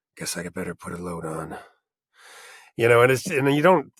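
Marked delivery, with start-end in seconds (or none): 0.1-1.5 low gravelly put-on voice, lower and quieter. Showing how he slips into it talking to himself at home: Geralt voice. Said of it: "suddenly Geralt's in the room".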